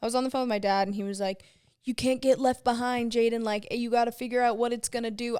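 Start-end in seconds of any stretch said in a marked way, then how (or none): 1.8-5.4 put-on Southern accent. Retelling a phone call with dad: imitating dad in a Southern accent. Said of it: "I always give my dad a Southern accent".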